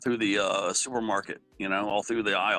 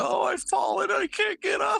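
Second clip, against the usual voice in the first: put-on very high, croaky, creaky little old lady voice. Retelling a movie scene where an old lady slipped: imitating an old lady. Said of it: "the old lady slipped in the period blood".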